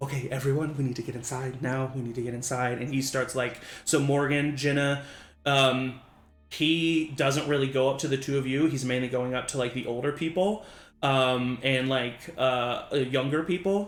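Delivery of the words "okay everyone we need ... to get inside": quiet muttering under the breath. Voicing Derek during a lockdown signal: under his breath. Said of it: "under his breath being like".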